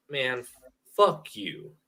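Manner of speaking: deep, slow, light country drawl. Showing someone how to say it, in a deeper and slower voice, not full country. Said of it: "you gotta go deeper and slower though".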